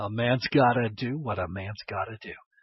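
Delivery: bad put-on cowboy film-star voice. Commenting on his own tough choices to viewers, the speaker does a really bad John Wayne imitation. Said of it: "my really bad John Wayne imitation".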